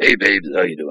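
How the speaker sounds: awful-sounding, strained, unhealthy-sounding character voice. Recreating a voice used 15 years ago, strained put-on character voice. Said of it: "it sort of sounded like".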